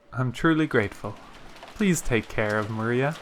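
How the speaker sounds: ordinary delivery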